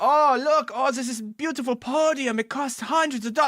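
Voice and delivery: put-on Swedish accent. Retelling a presenter's stage entrance: imitating a swedish presenter. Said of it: "he's, like, Swedish".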